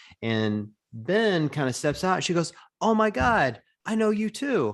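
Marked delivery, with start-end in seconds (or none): 2.8-4.7 put-on, very high, hyper-excited, starstruck gushing. Retelling what a woman said on seeing Ben; imitating a hyper-excited woman. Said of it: "she's hyper excited".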